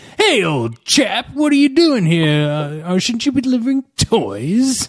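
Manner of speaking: fake mid-Atlantic accent, drawn out. Describing random churchgoers in a film scene greeting a man, in a quasi mid-Atlantic accent. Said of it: "in this quasi mid-Atlantic accent".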